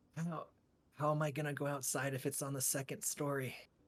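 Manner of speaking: really quiet, soft, hushed half-whisper. A tabletop player speaking in character as Orc, quiet half-whisper. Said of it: "just really quietly whispering".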